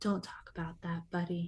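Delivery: very quiet, soft, lugubrious, sorrowful mournful voice. Mimicking a man who always says buddy: mock-sad lugubrious voice. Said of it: "in that sad voice".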